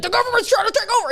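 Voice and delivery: very high, fast, breathless excitement. Retelling a podcast episode, imitating an excited Alex Jones. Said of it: "losing his breath, excited".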